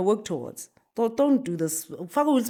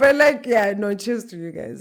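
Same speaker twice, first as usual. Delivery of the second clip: talking through laughter, louder; 4 dB louder than usual. Reacting to a joke about Will Smith lookalikes, laughing while talking. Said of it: "I'm sorry I'm laughing so hard".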